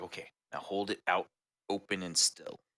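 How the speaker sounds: whispering. Narrating a game scene, Tiggerbakken whispers an instruction to the player. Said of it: "Tiggerbakken like whispers to you".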